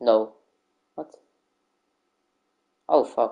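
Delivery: fed-up, annoyed, frustrated outburst. Reacting while setting something up, getting frustrated. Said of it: "I'm getting a bit frustrated".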